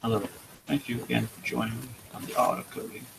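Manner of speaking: very soft, hushed put-on painter-style voice. Opening a coding session, the speaker slips into a Bob Ross voice. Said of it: "have to get my Bob, Ro- Bob Ross voice going on here".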